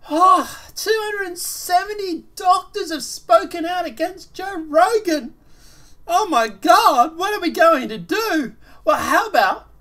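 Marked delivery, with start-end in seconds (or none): 0.1-8.5 fake worried sarcasm, higher and louder. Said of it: "I'm totally being sarcastic here".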